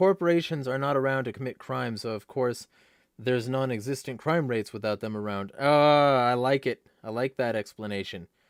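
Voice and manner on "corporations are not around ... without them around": normal talking voice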